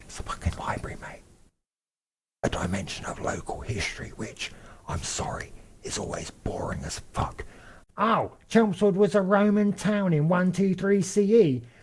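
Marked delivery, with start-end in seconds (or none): 0.0-7.4 very quiet, breathy, barely voiced whisper. Describing a library, the speaker hushes the listener, whispering.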